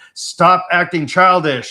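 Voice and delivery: booming giant voice. Retelling a dream where the nephew scolded them, in a booming voice. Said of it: "in this like booming voice".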